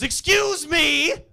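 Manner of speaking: put-on very high, shrill, loud, rude demanding tone. Retelling a woman throwing open her door after a doorbell prank, imitating a very impolite tone. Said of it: "very polite words in a very impolite tone".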